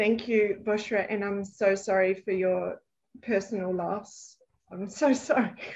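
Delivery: slow, choked up voice, near tears. Thanking a speaker and offering condolences for a personal loss, choked up, near tears.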